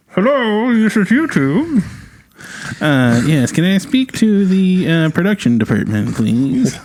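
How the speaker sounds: put-on old-timey voice going way up. Acting out a phone call to YouTube, old-timey Monopoly guy voice. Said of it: "I was trying to do an old-timey voice".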